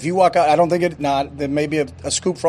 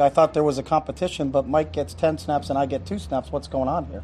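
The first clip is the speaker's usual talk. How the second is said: normal talking voice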